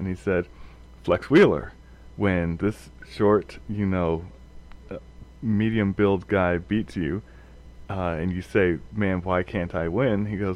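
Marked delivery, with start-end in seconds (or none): none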